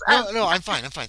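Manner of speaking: flustered, high voice. Voicing a rushing priest turning down offered help: flustered priest. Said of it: "He just seems embarrassed".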